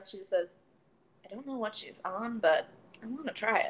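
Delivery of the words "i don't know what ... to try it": under her breath, quieter. Narrating a clumsy woman speaking to no one in particular, muttered under her breath. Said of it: "kind of under her breath".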